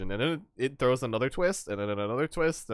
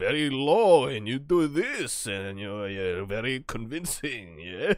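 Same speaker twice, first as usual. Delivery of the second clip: slow, fake, laid-on Russian accent. Showing how to do a Russian accent: put-on Russian accent. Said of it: "I really like Russian accents too".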